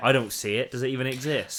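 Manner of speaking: mock arrogant dismissive voice. Imitating people who dismiss the issue: imitating an arrogant dismissive voice. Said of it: "that's where the arrogance".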